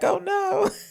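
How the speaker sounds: very high, weepy, tearful crying. Retelling a scene where two characters watch from a tower: imitating someone crying. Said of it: "both crying, like".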